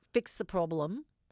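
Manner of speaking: ordinary talk, nothing marked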